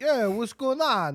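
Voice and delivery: imitated Brooklyn accent. Describing uninvited vampire guests showing up, voicing one of them; Brooklyn accent. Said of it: "they're all Italian?".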